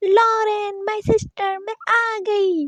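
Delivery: very slow, drawn-out shouting. Reading a story where a girl calls to her sister across a cafeteria: shouting a greeting. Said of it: "इतने चिल्लाकर कहा था".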